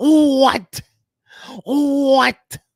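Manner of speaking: hollered, with the word what stretched out. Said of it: "my [name] [name] voice".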